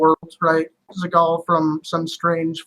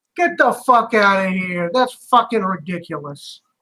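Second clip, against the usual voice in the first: put-on mock Boston accent; 3 semitones higher than usual. Joking about obnoxious people back east, doing a put-on boston accent. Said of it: "people from Boston are pretty fucking".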